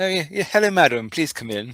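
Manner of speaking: polished posh voice. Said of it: "in a posh".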